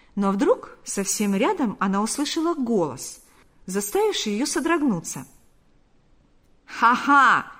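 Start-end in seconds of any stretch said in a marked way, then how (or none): 6.7-7.5 exclaiming, louder. Reading a story, Panas exclaims as a woman rejoins the guests; exclaimed. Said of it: "воскликнул Панас".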